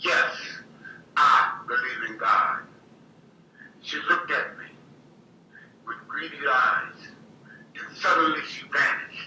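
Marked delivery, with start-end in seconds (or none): 0.0-2.6 put-on slow, firm, wholehearted, certain tone. Retelling own answer to the little person: retelling own words with conviction. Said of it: "with more conviction than I ever heard".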